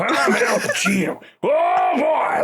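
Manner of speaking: overacted southern accent, very high, very slow, drawn-out. Describing a later Al Pacino role, in an overacted southern lawyer Pacino voice. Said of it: "overacts and puts on this kind of southern lawyer thing".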